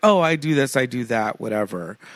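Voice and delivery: plain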